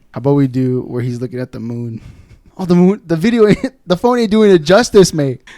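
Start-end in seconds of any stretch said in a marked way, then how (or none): 2.6-5.4 very loud, high, shouted put-on Irish accent. Doing an impression in an accent challenge: Conor McGregor impression. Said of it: "What does Conor McGregor say?".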